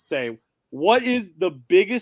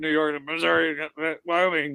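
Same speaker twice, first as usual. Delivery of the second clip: quietly mumbled, muttered under the breath. Saying what should have been said when asked for a state: muttered under the breath. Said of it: "I should have said it under my breath".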